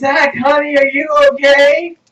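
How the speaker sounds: mock shouting voice. Retelling a mom calling downstairs to her screaming kid: imitating a mom shouting downstairs. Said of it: "My mom shouts downstairs".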